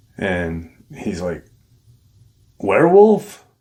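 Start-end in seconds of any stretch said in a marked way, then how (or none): 2.6-3.4 put-on very high, very loud, incredulous, disbelieving cry. Retelling someone's reply to a grim story, retelling a disbelieving question. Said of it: "in disbelief".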